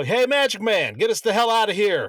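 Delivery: high-pitched shouted call. Playing a character calling to magic man for escape: in-character yell. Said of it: "And I'm gonna yell".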